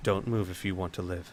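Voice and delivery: very soft, very quiet, close-in voice. Putting a knife to a man's throat, a character speaks very quietly. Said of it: "very quietly say".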